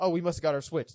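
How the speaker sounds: ordinary delivery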